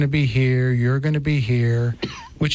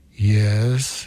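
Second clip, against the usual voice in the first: deep voice, much lower; 3 semitones lower than usual. Recalling a first confession, doing the voice heard behind the door: deep voice. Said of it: "I hear this deep voice go".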